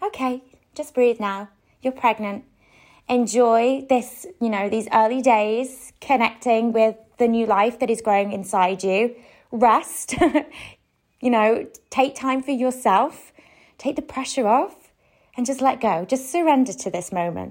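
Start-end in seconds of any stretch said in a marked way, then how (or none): none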